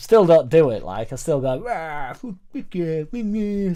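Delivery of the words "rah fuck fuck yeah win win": put-on slow, pitched-up, sulky teenage grumble. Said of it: "still like a moody teenager".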